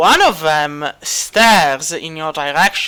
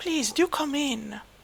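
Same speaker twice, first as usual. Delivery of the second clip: very quiet, very high, hushed, soft-spoken voice; 10 semitones higher, 12 dB quieter than usual. A game master voices her invitation from behind the door, very soft voice. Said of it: "you do hear a very soft voice".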